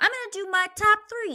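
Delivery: very high, loud squeaky voice. Imitating Tristan Thompson announcing his top three: high-pitched Tristan Thompson voice. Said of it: "a high-pitched voice".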